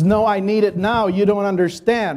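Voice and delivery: frantic, desperate, panicked insistence. Retelling what Eric said when his sales server crashed, imitating someone freaking out. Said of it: "He was freaking out".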